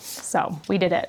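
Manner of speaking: usual speaking voice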